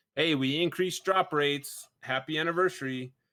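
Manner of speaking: usual speaking voice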